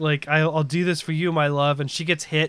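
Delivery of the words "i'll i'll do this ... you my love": ordinary delivery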